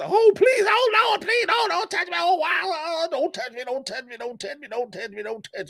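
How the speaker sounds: shrill, very high, desperate, frantic screaming. Retelling what you hear from the neighbours next door, imitating someone screaming. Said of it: "they screaming their ass".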